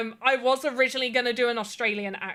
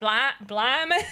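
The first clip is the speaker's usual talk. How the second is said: put-on Blackpool-sounding northern English accent. A speaker attempting an accent repeats a word, in a Blackpool-sounding northern accent. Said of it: "I think I'm sounding like I'm from Blackpool".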